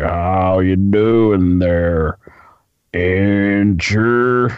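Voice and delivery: put-on slow Southern drawl. Imitating a wrestler greeting someone: long Southern drawl. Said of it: "I like his long Southern drawl".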